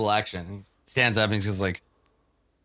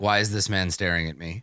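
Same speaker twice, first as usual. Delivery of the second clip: ordinary talk, nothing marked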